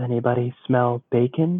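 hushed voice. Whispering in character to nearby people as a boar emerges: whispering. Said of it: "kinda whispers to the people who are around".

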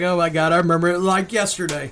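ordinary talk

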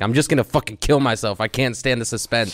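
high, loud, spiralling panicked outburst. Retelling a Family Guy scene about death: imitating Stewie in sheer panic. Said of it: "he just fucking sheer panic".

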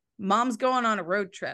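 plain

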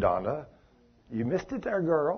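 acted gentle, hushed tone. Speaker retells how he corrected a missed part, retelling a gentle correction. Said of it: "Just so gently said".

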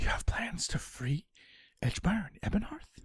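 whispered delivery in a put-on character voice. Voicing a character who hears a secret plan and replies: whispering in character. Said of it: "She whispers back".

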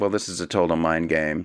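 usual speaking voice

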